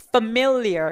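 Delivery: familiar with middle syllable mil stressed. English pronunciation lesson in Korean: stress on mil in familiar. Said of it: "중간에 강조 주시면 됩니다".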